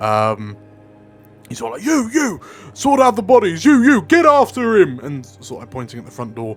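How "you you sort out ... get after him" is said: barking, loud, commanding shouting. Voicing a soldier who points at the door: barking orders. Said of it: "starts barking orders".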